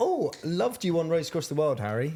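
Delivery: gentle bedside nurse voice. Picturing a nurse during the procedure: imitating a nurse. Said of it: "the nurse being like".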